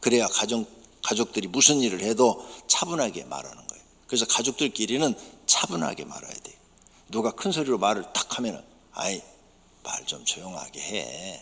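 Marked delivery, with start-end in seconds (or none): 8.9-11.4 calm, low, soft, slow and gentle voice. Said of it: "이렇게 조용하게".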